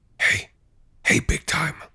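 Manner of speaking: carrying, theatrical stage whisper called out. Retelling a man calling out from a dark porch at night, in a stage whisper. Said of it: "called out to me out of the darkness in a stage whisper".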